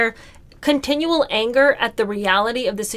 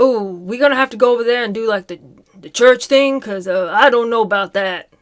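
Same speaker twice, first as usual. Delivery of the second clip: put-on switched-over British English accent; 4 dB louder than usual. Retelling how he annoyingly changes his speech partway through his story, imitating his switched accent. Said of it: "switches his accent when he starts talking about having to go over to England".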